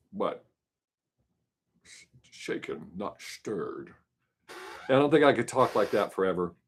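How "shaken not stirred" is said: whispered movie-star voice. Talking about liking impressions of Sean Connery: Sean Connery impression. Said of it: "I love when people do impressions of him".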